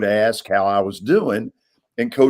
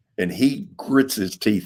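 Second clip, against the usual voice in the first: usual speaking voice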